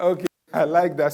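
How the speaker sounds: speaking through laughter. Reacting to someone's answer in a group discussion, laughing while talking. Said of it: "Sorry, I'm laughing".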